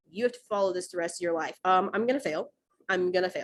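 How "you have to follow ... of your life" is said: plain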